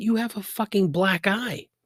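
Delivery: high, blunt put-on voice.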